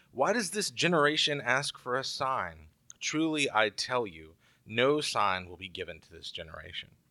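ordinary talk

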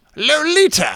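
very high, loud, belted put-on voice. Naming a movie in a guessing game: James Mason voice. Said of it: "You did a good James Mason just then".

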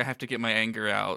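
plain

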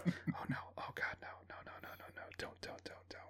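barely audible, whispered mutter under the breath. Retelling own reaction while watching a film in the theater: imitating muttering under breath. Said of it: "I'm saying it under my breath".

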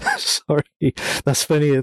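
talking through laughter. Apologizing to the other speaker about a funny scene, laughing while talking. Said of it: "I'm laughing".

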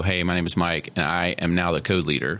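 plain

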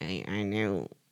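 mocking, taunting put-on voice. Talking about Caitlyn Jenner, the speaker does a Caitlyn Jenner impression. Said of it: "just the voice that I was doing".

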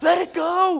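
shrill, high, loud preacher-style shouting. A dad retells what the retreat pastor was yelling at the youth group, imitating the pastor yelling. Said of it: "The pastor was yelling at them".

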